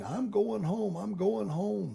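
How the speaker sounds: put-on high, rough scream. Retelling a Marine who shot himself in the foot: imitating someone screaming. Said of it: "he was screaming".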